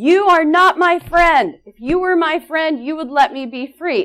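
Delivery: high, screaming voice. Retelling a dream, the speaker acts out screaming at a woman who found them: retelling a scream. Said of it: "And I started screaming".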